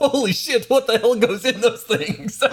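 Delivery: high-pitched mocking voice, laughing throughout.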